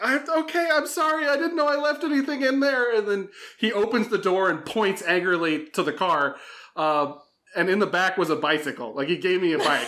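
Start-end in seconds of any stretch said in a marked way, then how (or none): 0.0-2.9 acted-out frightened tone, very high voice. Retelling apologizing to a man who kicked the car door, retelling a scared apology. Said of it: "I was so scared".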